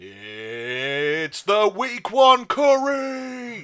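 drawn-out, very slow, rising boxing ring announcer cry. Speaker imagines the 'rumble' announcer calling out Curry, imitating the 'rumble' announcer call. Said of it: "imagine that if it was like going".

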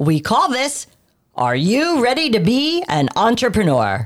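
slow, deliberate radio announcer voice. Host introduces the self-assessment test for listeners, in an announcer voice. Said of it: "In your best announcer voice".

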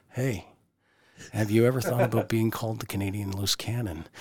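hushed, secretive voice, said quietly to the side. Role-playing a promoter's secret locker room remark: imitating someone speaking quietly. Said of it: "I'm gonna role play here".

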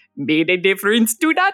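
put-on Jamaican-accented voice. Speaker recalls a friend's voice at the back of the mind, in a Jamaican accent. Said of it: "in this great Jamaican accent".

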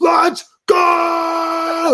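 put-on, very high, stretched-out, drawn-out scream. Retelling how a player broke the silence of a half-speed practice drill, imitating a scream. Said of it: "he just screams".

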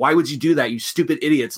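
ordinary delivery

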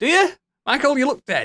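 mock incredulous voice.

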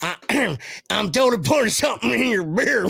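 down-home rural country accent. Repeating a line to a buddy in the country accent he says he has: country accent. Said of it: "I do have that country accent".

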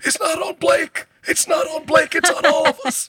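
put-on gasping, breathless, very high voice. Recalling a specific Clippers-era impression, breathless Jamie Foxx impression. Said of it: "You just have to feel like you can't breathe as you're talking".

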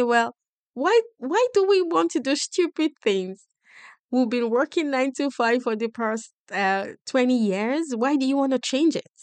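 freaked-out, panicky, frantic voice.

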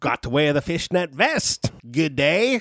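poor, fumbling Australian accent. Attempting an accent after being told not to try one; bad Crocodile Dundee accent. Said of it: "You're doing great".

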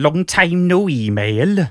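drawn-out put-on Welsh accent. Reading the next sentence of the letter: Welsh accent.

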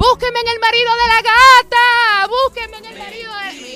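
put-on high, loud drunken yelling.

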